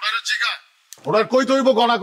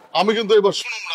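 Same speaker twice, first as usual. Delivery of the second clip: ordinary delivery, nothing marked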